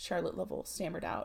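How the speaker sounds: ordinary delivery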